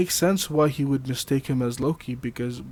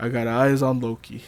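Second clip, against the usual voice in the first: ordinary talk, nothing marked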